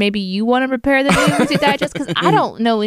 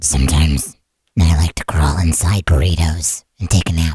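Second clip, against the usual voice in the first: deep, very low, creepy, scary voice. Podcast host performs a new character for the chat to name; scary voice. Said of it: "read the intro to the podcast in your scary voice".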